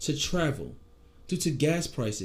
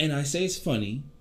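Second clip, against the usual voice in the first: usual speaking voice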